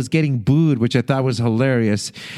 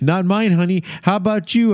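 put-on flustered, nervous voice, pitched up; 6 semitones higher than usual. Recapping a show, speaker acts out Phil answering an audience question, mock-nervous. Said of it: "Phil nervously says".

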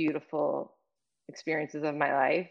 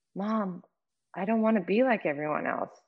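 mock-tearful, quiet, higher pitch; 4 semitones higher than usual. Mother retelling her daughter's reply to her, imitating someone crying quietly. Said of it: "tears quietly ran down her face".

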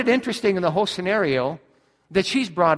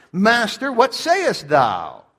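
scornful, sneering, swooping contemptuous tone, put-on. Retelling accusers demanding an answer from the master, with mock contempt. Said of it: "I'm sure with contempt".

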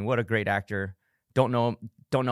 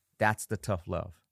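ordinary delivery

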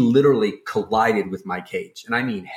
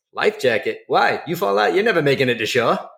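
bad, put-on Boston accent, pitched up; 5 semitones higher than usual. Retelling the captain's reply about the life jacket, in a bad Boston accent. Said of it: "So your captain was from Boston?".

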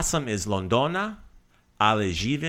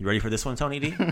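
ordinary talk

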